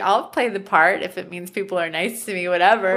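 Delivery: ordinary talk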